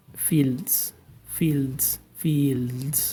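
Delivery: fields pronounced with a Spanish accent. Contrasting pronunciations of one word, saying it like a Spanish version: Spanish accent. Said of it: "I will try to say it like a Spanish version".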